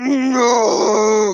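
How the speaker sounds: very loud, shrill, wailing troll shout. Copying a game troll's cry from the game audio: imitating the troll's "no!". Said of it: "sounded exactly like the troll sounded".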